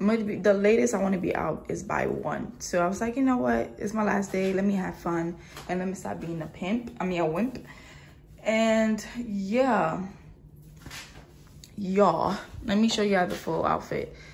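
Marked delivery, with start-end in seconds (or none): none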